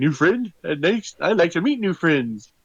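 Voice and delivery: excited, high, eager, all-excited delivery. Voicing the group's leader meeting a new friend: acting excited. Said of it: "Luther's all excited".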